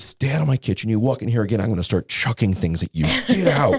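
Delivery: seething, fierce, furious, high-pitched voice. Speaker retells what they said to a woman, re-enacting screaming at her. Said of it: "I'm screaming at her".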